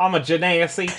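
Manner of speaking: put-on Southern accent. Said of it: "a southern accent on this podcast".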